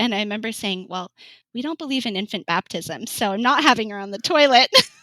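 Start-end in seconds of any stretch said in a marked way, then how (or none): 0.9-4.7 acted-out, snarky, sarcastic quip. Recalling what she said between contractions, retelling a sarcastic remark. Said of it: "kinda sarcastic, like, person would come out".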